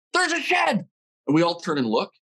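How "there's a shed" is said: sudden shrill, very high-pitched scream. Retelling a shout spotting an antler from a truck: imitating a scream. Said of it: "my brother screams".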